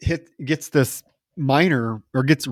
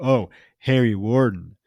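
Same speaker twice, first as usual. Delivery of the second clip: slow, sarcastic chiming-in remark. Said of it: "Ben chimes in sarcastically".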